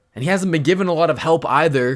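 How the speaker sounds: loud, high-pitched, heated rant.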